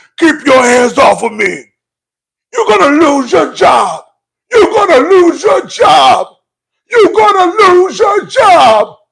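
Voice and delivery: affected very low voice. Retelling what Jocelyn said: imitating Jocelyn's much deeper voice. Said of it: "Jocelyn's voice went down fifteen octaves".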